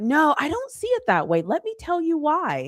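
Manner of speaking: businesslike professional voice, high and swooping. Speaker teasing the listener, mimicking their professional voice. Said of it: "You got in your like professional voice".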